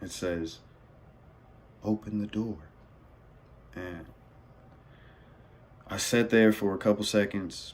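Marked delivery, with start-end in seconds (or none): 1.8-2.6 gentle, sweet, soft half-whisper right in the ear. Retelling a voice that half-whispered in the speaker's ear while drinking: sweetest half-whisper. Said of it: "the sweetest voice just whispers in my ear".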